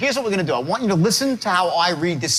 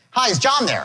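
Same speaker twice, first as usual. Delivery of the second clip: assured, polished, confident delivery; 4 semitones higher than usual. Showing a trainee the right way to open a sales call: confident sales opening. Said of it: "Which is better, his or mine? Mine".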